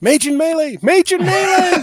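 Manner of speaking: shrill, very high, repeated screech. A player voices their character Merlin in a fight, Merlin screaming. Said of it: "Merlin is going to start screaming".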